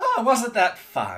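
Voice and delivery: high-pitched, loud fey creature voice. Voicing a fey heard from the treetops after a bear trap: fey creature voice. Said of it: "you hear from the treetops".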